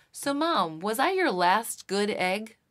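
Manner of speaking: put-on very loud, high, earnest child's blurt. You retell a six-year-old's sincere question to his mom on a plane, imitating Luca speaking very loudly. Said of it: "he said very loudly".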